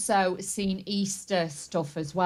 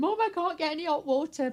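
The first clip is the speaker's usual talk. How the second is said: mock high, tearful crying; 8 semitones higher than usual. Retelling a daughter's phone call about having no hot water, imitating someone crying on the phone. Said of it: "she was on the phone crying".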